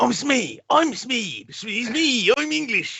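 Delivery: put-on very high, drawn-out, slow English accent. Retelling how an actor talks in Hook: Bob Hoskins as Smee, English accent. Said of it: "you hear his natural accent in Hook".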